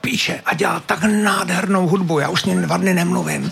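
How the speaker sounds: imitated, mimicked whisper. Retelling a phone call where a woman answered, imitating her whisper. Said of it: "ona šeptala".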